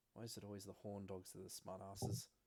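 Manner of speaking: muttering under breath. A man returning to his post mutters to himself; muttering under breath. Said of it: "you hear him mutter something about".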